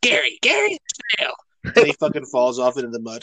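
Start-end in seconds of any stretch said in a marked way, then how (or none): 0.0-1.3 very high-pitched cartoon voice. Retelling SpongeBob trying to get Gary into a bath: SpongeBob voice. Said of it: "When SpongeBob was trying to get him to take a bath".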